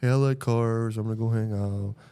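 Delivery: flat, dead, level monotone with no inflection. Mocking a dull way of talking on the show, in a flat monotone. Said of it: "it's just very monotone".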